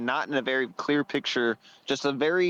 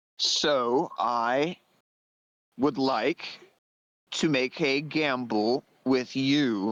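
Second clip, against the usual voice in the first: each word cleanly enunciated, very clear crisp tone. Retelling how a man at the table addressed Alina, in a very clear tone. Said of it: "he says in this like very clear tone".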